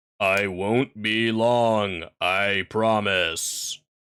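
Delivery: very deep, near monotone drone. Reading a man's line as he speaks to a woman: low, almost monotone voice. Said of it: "almost monotone voice again".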